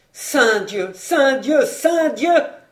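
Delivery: frantic, wild, loud joyful cry of elation. A rider spurs his galloping horse along the road, crying out wildly. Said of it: "Cria-t-il follement".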